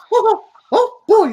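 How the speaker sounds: put-on, very high, squeaky exclamatory voice. Speaker shows off the voice he can now do: very high-pitched voice. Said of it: "I can do shit like this".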